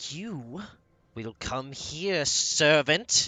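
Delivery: slow, high, commanding imperious voice. Voicing a mistress forcing a servant into the room: commanding mistress voice. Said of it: "in a crushing manner and just goes".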